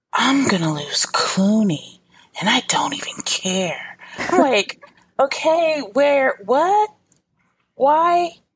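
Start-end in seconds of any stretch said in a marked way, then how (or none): 0.1-4.0 mock-seductive, sultry, sexy put-on voice. Retelling what a woman said while tying up her hair, put-on sexy voice. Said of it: "She's putting on the sexy voice".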